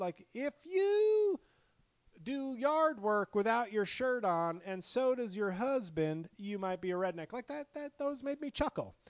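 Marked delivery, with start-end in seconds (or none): 0.3-7.3 high, slow, comic joke delivery. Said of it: "but when he said, like".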